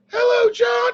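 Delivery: very high, squeaky cartoon-mouse voice. A senator retells a phone call he got: Jared Kushner impression, high voice. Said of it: "he's got a high voice".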